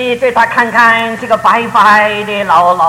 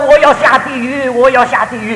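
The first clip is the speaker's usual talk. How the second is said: usual speaking voice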